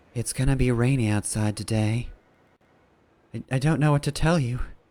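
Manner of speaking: mopey, downcast, gloomy, depressed tone. Acting out someone depressed about the weather, mock-depressed tone. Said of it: "what if she's just very depressed about the weather?".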